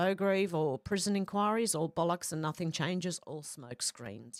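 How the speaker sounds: ordinary talk, nothing marked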